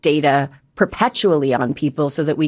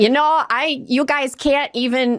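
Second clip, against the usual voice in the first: put-on aggrieved Wisconsin accent, very high, slow; 9 semitones higher than usual. Imitating a man complaining about camera protesters, in a mock-aggrieved Wisconsin accent. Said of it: "he does it with this really real Wisconsin accent".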